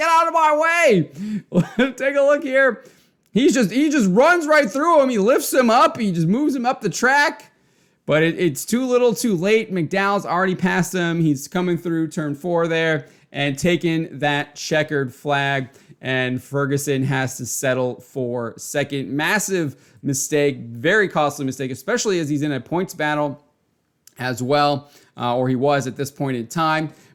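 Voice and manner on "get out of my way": high-pitched, loud, put-on angry yell. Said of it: "and he's like".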